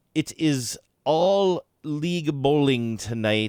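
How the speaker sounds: curt, condescending, superior nerdy clerk voice. Retelling what a person who was short with the speaker said: Comic Book Guy voice. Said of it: "he talked like the comic book guy".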